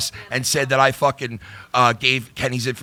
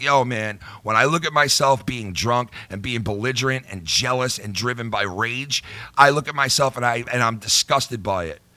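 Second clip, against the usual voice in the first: ordinary talk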